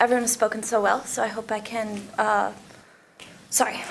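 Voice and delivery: anxious, self-conscious, nervous, halting speech. A public speaker addressing the council members begins her comment, nervous. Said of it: "I'm really nervous".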